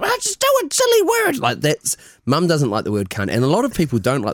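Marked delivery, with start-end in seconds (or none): 0.0-1.4 daft, silly voice, very high-pitched. Retelling what mum said, in a silly voice imitating mum. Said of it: "your mum has a very silly voice".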